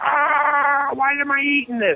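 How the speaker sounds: very high, slow, stretched-out panicked wail. Retelling how party guests reacted to a very hot wing: imitating people screaming.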